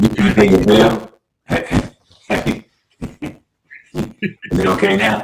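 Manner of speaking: rasping, distorted voice.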